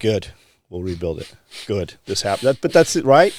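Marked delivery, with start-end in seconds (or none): 0.0-2.5 put-on calm, unfazed tough-guy voice. Imitating Jocko reacting to a building burning down: Jocko Willink impression. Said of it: "that typical Jocko".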